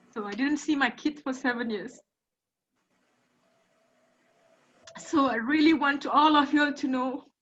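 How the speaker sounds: high, tearful speech, speaking through tears. Speaking to everyone present, crying while speaking. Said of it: "I'm crying again".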